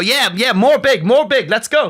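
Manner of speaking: very high, slow pidgin broken English. Retelling answering a construction coworker: imitating own broken english. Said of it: "broken English back to someone speaking broken English".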